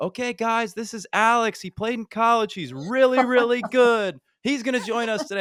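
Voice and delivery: loud, high calling out. A speaker retells a man announcing him to the group, retelling someone yelling. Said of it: "and he yells".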